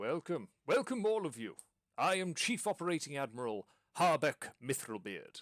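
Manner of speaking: booming, high calling voice. A dwarf admiral on a gantry greets the passengers below, booming voice. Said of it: "you hear a voice booming down".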